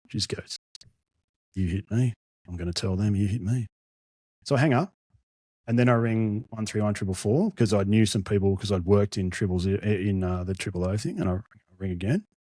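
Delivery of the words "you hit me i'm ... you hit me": put-on, mock-calm voice. Retelling what a woman said after the speaker rang emergency services, imitating a calm voice. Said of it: "so calmly".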